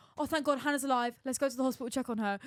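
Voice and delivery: ordinary talk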